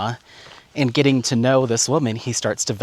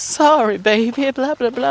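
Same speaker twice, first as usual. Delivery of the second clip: put-on grandma voice, very high-pitched; 13 semitones higher, 3 dB louder than usual. Retelling a scene where he answers her surprised reaction: big mom voice. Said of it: "got the big mom voice".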